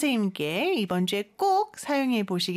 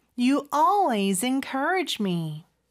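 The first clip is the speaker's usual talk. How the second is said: very slow delivery with stress on "always". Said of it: "따라해 볼까요".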